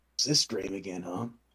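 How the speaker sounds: soft, half-heard private mumbling to oneself. Voicing a waking character who mumbles to himself: mumbling to himself. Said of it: "you can kinda hear him mumble to himself".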